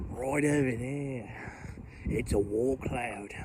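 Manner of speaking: put-on Australian accent, done badly. Pointing out a wall cloud to listeners, bad australian accent. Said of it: "That was a bad accent".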